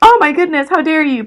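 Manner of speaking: very high, loud, scandalized offended outrage. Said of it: "They're like".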